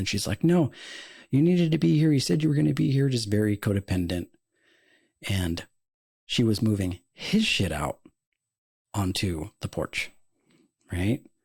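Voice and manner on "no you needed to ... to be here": mock screaming, higher and faster. Retelling what a woman shouted at someone on the phone, putting on her voice, imitating someone screaming. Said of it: "just being like very calm and collective".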